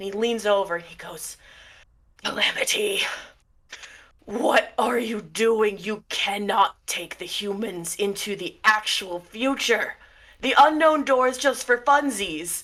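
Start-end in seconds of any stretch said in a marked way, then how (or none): 2.2-12.6 loud, growling monstrous creature voice. Telling a story, speaker voices a smoke-and-fire creature leaning over to Calamity, growling fire monster voice. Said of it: "he growls with these huge monstrous eyes glowing".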